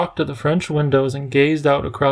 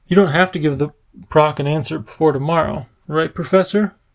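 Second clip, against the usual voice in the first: ordinary delivery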